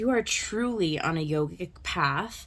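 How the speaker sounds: ordinary delivery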